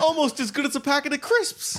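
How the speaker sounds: fake British accent. On a podcast, receiving chocolates from a co-host, in a put-on British accent. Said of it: "Every time the UK accents come out".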